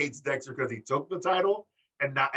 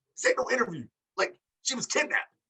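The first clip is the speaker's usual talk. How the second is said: put-on very high-pitched, heated, protesting yell; 10 semitones higher than usual. Retelling Johnny yelling at the interviewer, imitating Johnny yelling. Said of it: "Johnny's like yelling at Mackenzie".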